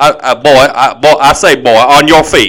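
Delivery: put-on cartoon rooster voice. Picturing a player's entrance and telling him to get on his feet, in Foghorn Leghorn voice. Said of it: "Like Foghorn Leghorn?".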